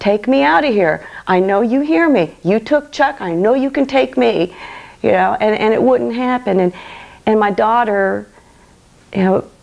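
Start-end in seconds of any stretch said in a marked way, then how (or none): 0.0-4.5 bitter, angry, insistent pleading tone. Retelling yelling at God while pacing the hallway: retelling yelling at God. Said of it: "yelling at God".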